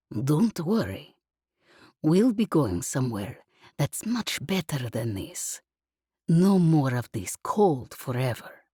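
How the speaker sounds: gruff, roughened, rough-edged character voice. A narrator reads a man's words to a woman on a ship's deck: quiet, gruff voice. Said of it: "he'd said in his quiet, gruff voice".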